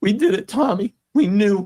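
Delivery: emotional, choked voice. Retelling the moment the news came, getting emotional. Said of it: "And I'm gonna get emotional".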